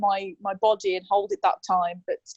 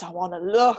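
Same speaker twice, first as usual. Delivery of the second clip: deep, low demonic voice; 2 semitones lower than usual. Retelling what she said to him: deep demonic voice. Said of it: "some deep demonic voice".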